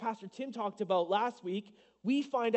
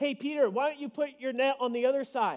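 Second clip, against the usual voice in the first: playful, teasing, mock sarcastic yell; 3 semitones higher, 3 dB louder than usual. Telling the story of Jesus calling to Peter from the shoreline, acting out a playful sarcastic yell. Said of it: "probably in a sarcastic way".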